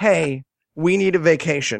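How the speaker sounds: ordinary talk, nothing marked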